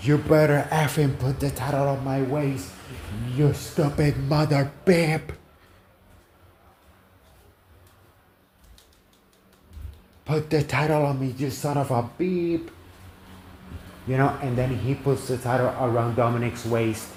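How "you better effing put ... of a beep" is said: put-on angry screaming, pitched higher. Retelling a wrestling segment where Dominic confronts Rey: imitating Dominik Mysterio screaming. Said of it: "Dominic gets into his face and starts screaming".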